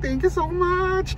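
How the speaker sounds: tearful, high-pitched, slow crying voice.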